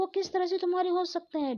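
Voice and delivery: exasperated, protesting tone.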